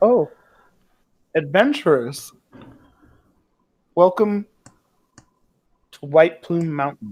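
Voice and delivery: amused, said through a light chuckle. Playing a woman greeting adventurers, amused, with a chuckle. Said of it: "She kind of smiles and chuckles and she says".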